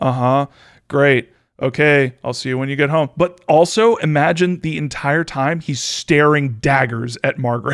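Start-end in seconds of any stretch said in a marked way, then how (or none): 0.0-3.1 play-acted dead-level, toneless, flat monotone. Retelling a man answering his wife on the phone, imitating a monotone reply. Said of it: "doing it really monotone".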